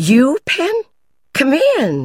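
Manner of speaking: very high, bright, cheerful sing-song, drawn out slowly. Penn knocks at Ginny's door and she calls him in: Ginny's high cheerful voice. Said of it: "Her rather high, cheerful voice called".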